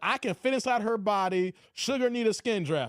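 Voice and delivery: ordinary talk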